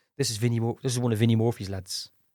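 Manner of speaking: ordinary talk, nothing marked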